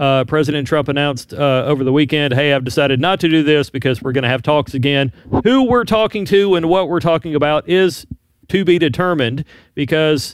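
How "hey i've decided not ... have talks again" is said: plain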